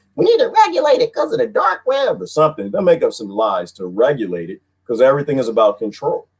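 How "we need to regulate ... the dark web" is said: very high yell, pitch swinging all over. Imitating a feared regulator's complaint: imitating Janet Yellen yelling. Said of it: "she'll start to yelling about something".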